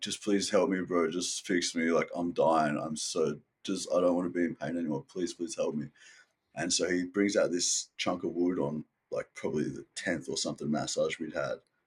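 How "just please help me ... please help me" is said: put-on desperate pleading. Speaker retells begging the guy massaging him for help, retelling desperate pleading. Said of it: "I was like so desperate".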